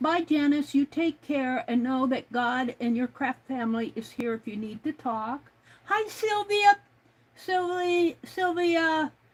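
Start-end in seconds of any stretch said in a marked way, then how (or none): none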